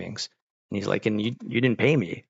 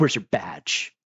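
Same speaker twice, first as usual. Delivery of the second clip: hostile, angry, demanding tone; 2 semitones lower than usual. Retelling how a work lead greeted every man: imitating an angry demand. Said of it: "She's so angry".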